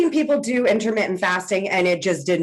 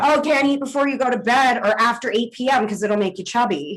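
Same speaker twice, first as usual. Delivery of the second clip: ordinary talk, nothing marked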